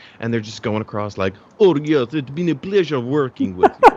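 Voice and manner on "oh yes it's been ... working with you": loud, comic, put-on Russian accent. Imagining the show with everyone's accent russian, in a russian accent. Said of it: "had like a fucking Russian accent".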